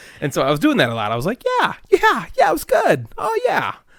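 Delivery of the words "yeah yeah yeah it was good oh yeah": insincere, very high, fake, drawn-out put-on voice. Retelling his replies in a voice he was called out on, fake high-pitched voice. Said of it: "why are you talking so high?".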